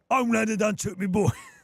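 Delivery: bad exaggerated British accent. Practising a line while trying out a bad British accent. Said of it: "do a bad British accent".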